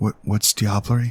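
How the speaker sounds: hushed half-whisper. Voicing a character who speaks up after noticing someone looking: half-whispering. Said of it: "she whispers to you".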